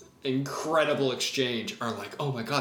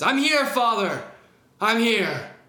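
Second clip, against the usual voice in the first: brave, bold, defiant, raised heroic cry; 8 semitones higher, 6 dB louder than usual. Narrator telling a story, the demon facing its father, in a brave demon voice. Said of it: "bravely, the demon says".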